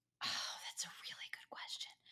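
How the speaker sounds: very quiet, hushed whisper. Answering a question about which athlete to have on a podcast: whispering. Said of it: "I don't know why I whispered about it".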